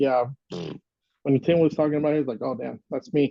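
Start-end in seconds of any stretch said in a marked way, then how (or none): none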